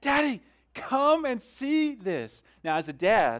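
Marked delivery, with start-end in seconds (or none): 0.0-2.4 put-on very high, very slow, excited little-girl yell. A dad recreating his daughters calling him over, imitating their little voices yelling. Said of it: "their little voices yelling".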